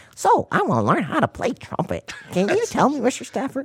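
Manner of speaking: silly voice, very high, swooping and sing-song. Retelling a phone call from someone calling himself Billy, use a ridiculously silly voice. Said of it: "he'll have this ridiculously silly voice".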